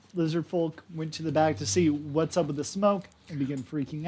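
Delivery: plain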